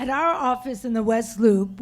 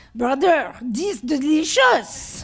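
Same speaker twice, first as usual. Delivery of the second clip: put-on French-accented broken English phrasing; 3 semitones higher, 4 dB louder than usual. Retelling what Hassan said at the door, imitating Hassan's French accent. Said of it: "this is how he said it with his French accent".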